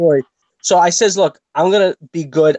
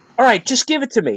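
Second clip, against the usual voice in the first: put-on fuming voice; 8 semitones higher than usual. Retelling an argument with a woman over bread, acting out a fuming retort. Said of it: "And I'm fuming".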